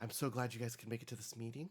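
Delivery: polished professional business voice. Voicing a character greeting the players at a meeting: put-on corporate voice. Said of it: "she's putting on her corporate voice".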